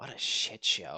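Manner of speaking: grumbling, muttering to herself. After returning Skyrob's salute, she speaks, muttering. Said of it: "she mutters".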